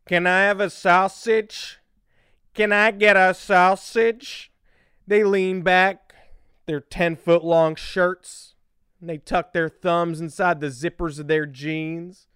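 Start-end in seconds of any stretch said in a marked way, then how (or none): 0.1-4.5 put-on Chicago accent, much slower. Speaker mocking people from different cities, imitating a Chicagoan. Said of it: "Then you go to Chicago, and they're like".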